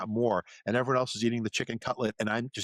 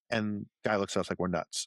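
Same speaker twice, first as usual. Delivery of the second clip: plain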